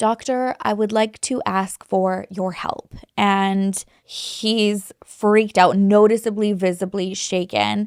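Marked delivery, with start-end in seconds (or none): 0.0-2.9 mock courteous, respectful, very polite tone. Retelling what a voice said to Doctor Chua, imitating a very polite voice. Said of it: "like very politely".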